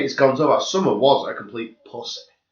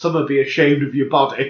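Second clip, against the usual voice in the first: usual speaking voice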